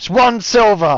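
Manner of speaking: grumpy, fed-up voice. Voicing a cook who ladles a bowl and names the price: disgruntled cook voice. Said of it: "he's just very disgruntled".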